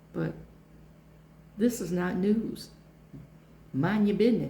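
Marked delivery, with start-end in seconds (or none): 3.7-4.5 street-style accent, raised voice.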